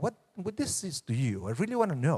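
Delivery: wise, sage-like voice. Showing how the wise one asks the Seder question: voice of the wise questioner. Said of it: "saying it with very different body language and tone".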